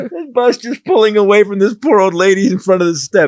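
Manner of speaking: giggling through the words. Picturing a bus pulling away from an old lady: laughing while talking. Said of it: "I'm sorry I'm laughing".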